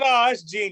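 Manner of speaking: ordinary talk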